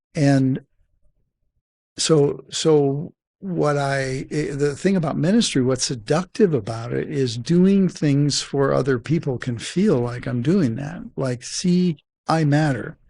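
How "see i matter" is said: put-on small, childlike little boy voice. Speaker discussing ministry, illustrating the tone he uses, little boy voice. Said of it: "the tone of voice I use when I say that, it's a little boy".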